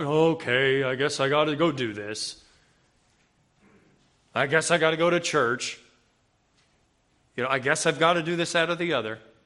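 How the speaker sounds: gloomy, droopy, glum, dragging voice. Speaker acting out their own reluctant thoughts, in an Eeyore voice. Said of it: "If you hear my Eeyore in my voice there".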